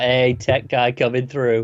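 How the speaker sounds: put-on smug voice. Retelling how Cisco shows up at the crime scene: smug Cisco voice. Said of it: "so smug".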